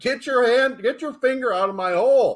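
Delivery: acted, very high, loud blurted-out yell. Retelling a moment at the movies: imitating a loud outburst. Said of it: "And I said really loud".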